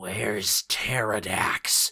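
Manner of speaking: snarling, growling dragon voice. Narrator reading a dragon's demand to a trader, in a growling dragon voice. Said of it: "the dragon growled".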